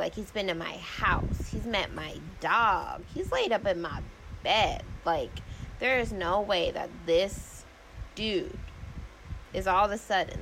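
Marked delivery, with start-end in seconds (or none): none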